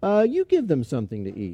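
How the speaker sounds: casual, matter-of-fact, as if utterly routine. Retelling the scripture scene, voicing Jesus: matter-of-fact Jesus voice. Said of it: "he says in this very matter-of-fact way".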